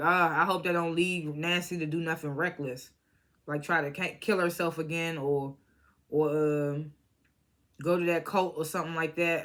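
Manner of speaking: ordinary talk, nothing marked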